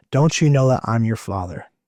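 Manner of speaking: put-on thunderous, booming yet loving, peaceful voice. Recounting a voice that spoke to him, imitating a thunderous, loving voice. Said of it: "It was like thunder".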